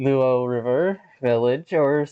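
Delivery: ordinary delivery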